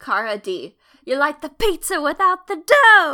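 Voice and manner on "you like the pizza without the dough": very loud, high-pitched chef-style shouting. Insulting someone named in a shout-out, in a Gordon Ramsay-style insult. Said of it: "insult them in a Gordon Ramsay-esque way".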